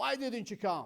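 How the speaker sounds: tense, angry, accusing tone. Teaching turkish, accusing someone of not coming, angry accusing tone. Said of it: "I'm not a kind person now. I'm nervous. I'm angry".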